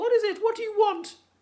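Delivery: very high, very loud, shrill crackling shriek. Narrator reading a frightened flying creature crying out at Michael: shrill, crackling voice. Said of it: "cried out in a shrill, crackling voice".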